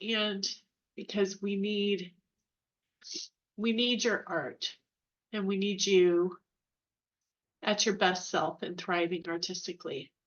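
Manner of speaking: emotional, voice catching. Speaker telling listening artists they are needed, choked up. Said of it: "I'm gonna get choked up".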